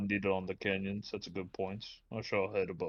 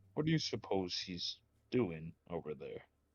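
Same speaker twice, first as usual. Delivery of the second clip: quiet, soft half-whisper; 2 semitones lower, 4 dB quieter than usual. Leaning over to Olive to ask about the professor: half-whispering to Olive. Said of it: "kinda whisper".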